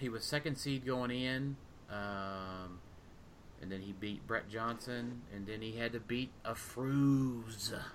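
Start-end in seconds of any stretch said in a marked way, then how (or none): 5.3-7.7 ominous, threatening, menacing, drawn-out delivery. Speaker listing the opponents a competitor beat in a tournament, menacing. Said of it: "I love how you say it so menacingly".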